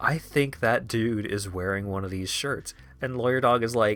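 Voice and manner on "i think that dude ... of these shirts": soft, hushed half-whispered word. Retelling quietly telling a friend about a stranger's shirt: retelling a half-whisper. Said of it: "I whisper to him".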